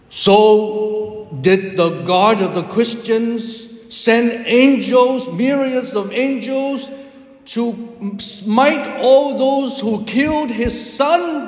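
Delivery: put-on bellowing, very high and climbing. Act out Genghis Khan shooting up when Jesus dies in the story, in a bellowing Genghis Khan voice. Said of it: "in a bellowing voice said".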